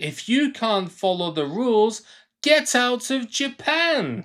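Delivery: mocking put-on voice.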